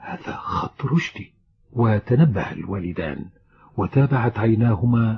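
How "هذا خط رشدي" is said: puzzled, surprised whispered mutter under the breath. A man sitting with his parents sees a letter's envelope, muttering in surprise. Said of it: "تمتم بغرابة".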